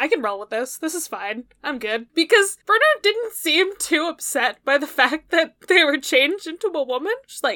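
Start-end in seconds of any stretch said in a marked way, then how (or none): none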